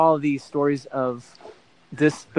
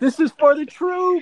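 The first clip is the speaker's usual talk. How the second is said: mock screaming cry, very high; 13 semitones higher than usual. Retelling a friend's antics before a surfing trip: imitating someone screaming.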